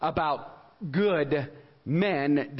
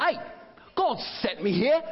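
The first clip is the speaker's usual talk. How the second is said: pitched-up delivery with a little extra flair; 8 semitones higher than usual. Showing the congregation how to say the line with a little English. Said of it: "you could do it with a little English".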